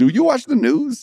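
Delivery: very high, loud sarcastic tone. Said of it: "And I'm like".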